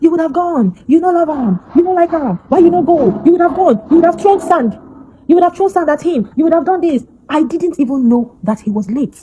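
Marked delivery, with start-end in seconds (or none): 0.0-7.0 high, raised, furious accusing shouts. Retelling accusations from a crowd at the house: imitating people shouting. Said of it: "People were shouting".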